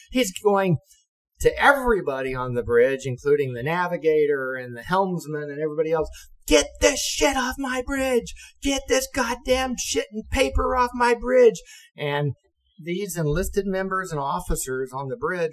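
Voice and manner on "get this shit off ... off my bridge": very high-pitched screaming. Retelling how the captain yelled at everyone on the bridge, imitating his screaming. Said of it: "the captain screaming".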